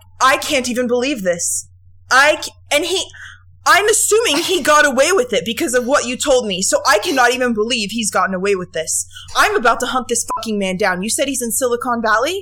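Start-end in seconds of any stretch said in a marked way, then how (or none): 0.2-11.0 furious, voice shaking with anger. Reacting to the other speaker's story about a man: shaking with anger. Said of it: "I'm literally shaking right now because I'm so angry".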